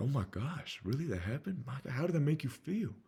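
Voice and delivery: sounding truly concerned. Coaching on being mindful of your voice: concerned tone. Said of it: "Can you sound concerned? Like".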